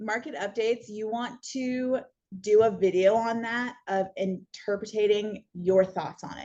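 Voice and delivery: deliberately slowed delivery.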